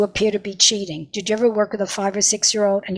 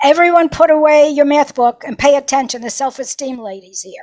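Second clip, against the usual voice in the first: mock teacher voice, raised, high shout; 5 semitones higher, 6 dB louder than usual. Retelling a first grade teacher announcing a visitor: imitating a teacher shouting. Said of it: "the teacher shouted".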